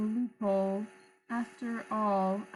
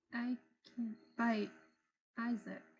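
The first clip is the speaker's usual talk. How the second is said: very quiet, almost inaudible voice; 7 dB quieter than usual. Repeating her line after someone says they can barely hear: very quiet voice. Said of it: "I can barely hear you".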